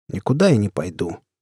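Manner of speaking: tired, weary, worn-out, spent delivery. A man answering someone seeking easy profit, in a tired voice. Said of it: "сказал я уставшим голосом".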